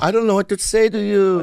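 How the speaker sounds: put-on Korean-accented English. Imagining meeting a tall man he admires, speaking in a korean accent. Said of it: "Like Korean accent?".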